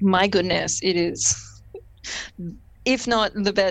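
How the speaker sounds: very slow, drawn-out, dripping sarcasm. Praising a fight scene's sped-up blade flip: sarcastic praise. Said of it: "This is very sarcastic".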